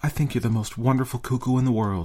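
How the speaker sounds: hushed whisper. Doris bending close to the cuckoo clock's little door, whispering to it. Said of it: "she whispered".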